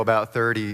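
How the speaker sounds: ordinary talk, nothing marked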